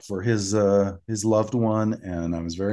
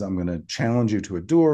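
usual speaking voice

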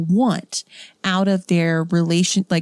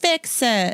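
demanding tone, high-pitched; 5 semitones higher than usual. Summing up what the reviews said, imitating a reviewer. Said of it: "That's my reviewer voice".

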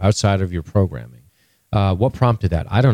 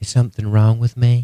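bad put-on female character voice, higher; 3 semitones higher than usual. Retelling a show scene, doing a terrible Dolores voice. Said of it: "Your Dolores voice is terrible".

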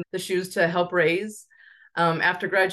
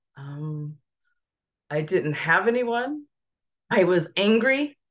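raw, emotional, emotion taking over the words. Speaker recalling why she started a foundation to help other families, emotional. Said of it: "I don't know why I got so emotional".

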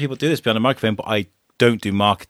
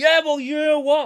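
mock annoyed, argumentative tone, higher pitch. Retelling snapping at the wife mid-argument before going live: imitating own annoyed arguing. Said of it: "me and the wife have had beef".

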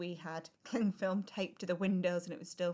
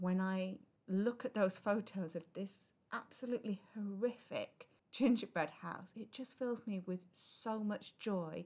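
emotional, choked-up voice close to breaking, near tears. Telling a personal story, speaker admits being nearly in tears. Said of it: "I'm nearly in tears now".

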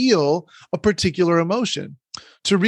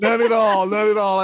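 sarcastic, laughing through the words; 3 semitones higher than usual. Joking with a co-host about rarely getting angry: laughing while talking. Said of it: "as I'm laughing".

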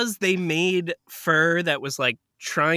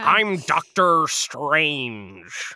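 exaggerated American accent leaning hard on every R; 2 semitones lower than usual. Mocking a British actor playing Dr. Strange: Benedict Cumberbatch's hard-R American accent. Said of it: "what Benedict Cumberbatch does when he tries to do an American accent. ... Listen to my hard R's".

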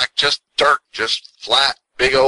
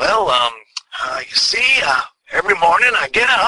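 raised pitch, hesitating throughout; 5 semitones higher than usual. Retelling a talk show answer: George Burns impersonation. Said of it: "this is my George Burns impersonation".

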